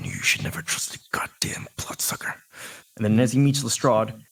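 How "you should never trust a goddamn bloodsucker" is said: hushed, quieter mutter under the breath. Voicing a character muttering after a perception check: muttering under his breath. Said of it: "you hear under his breath".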